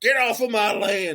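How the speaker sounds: very high put-on West Virginia hillbilly voice. Voicing a territorial squirrel as a West Virginia hillbilly. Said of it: "like it was a West Virginia hillbilly".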